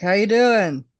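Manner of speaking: put-on loud, high elderly old man voice. Showing how they talk to old people at work: imitating an old man. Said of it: "there's an old man".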